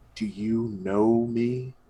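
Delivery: low, croaky, gravelly voice. Narrator voices an unseen presence speaking from the dark: low croaky gravelly voice. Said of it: "a voice kind of low and croaky and gravelly".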